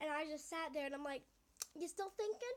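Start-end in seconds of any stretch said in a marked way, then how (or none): 1.7-2.6 cheeky, rude, sassy tone, pitched up. Retelling her own reply to a demand: imitating her own sassy retort. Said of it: "I was sassy".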